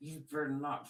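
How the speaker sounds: words forced through clenched, gritted teeth. Acting out someone's warning, imitating talking through gritted teeth. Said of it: "through their teeth".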